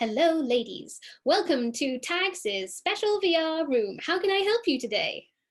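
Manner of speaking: tiny, high little cartoon voice. Voicing the figure who greets the players in the VR room: little cartoon guy voice. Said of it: "there's a little sort of cartoon guy".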